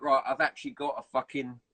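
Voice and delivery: normal talking voice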